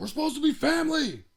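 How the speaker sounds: put-on scream, very high-pitched. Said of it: "He's screaming at them".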